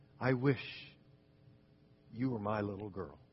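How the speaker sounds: hushed, low, very soft half-whisper. Retelling the seven words Ms. Leonard said that changed her life, half-whispering. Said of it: "said in a whisper".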